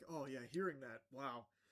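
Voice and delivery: sarcastic, snide, mocking spokesperson voice. Retelling how the spokesperson reacted: mocking imitation of the spokesperson. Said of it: "I also love how she's like".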